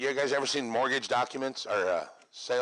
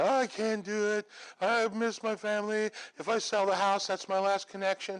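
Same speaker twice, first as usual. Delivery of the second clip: high, tearful, weepy crying voice; 9 semitones higher than usual. Retelling a phone call on closing day: imitating someone crying.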